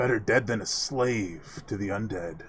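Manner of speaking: words snarled through. Voicing an armored man answering the party, snarling. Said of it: "He snarls".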